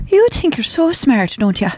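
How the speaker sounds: put-on Irish accent. After being asked to hear an Irish accent, Irish accent. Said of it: "I want to hear your Irish accent now".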